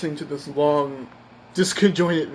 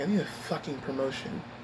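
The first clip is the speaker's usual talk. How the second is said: mock muttering under breath, much quieter; 9 dB quieter than usual. Recalling leaving after a frustrating exchange, retelling muttering under breath. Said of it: "I said to myself under my breath".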